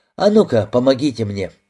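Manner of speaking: ordinary delivery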